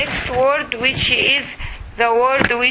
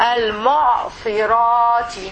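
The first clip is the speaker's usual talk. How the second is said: slow, careful, drawn-out al-mu'sirati. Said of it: "difficult words to read".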